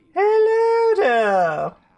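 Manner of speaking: put-on very high-pitched, loud, swooping fancy accent. Copying the accent of a fancy lady from a game: Mrs Pearmont accent. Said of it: "she had this amazing accent that I loved taking, like, like, copying".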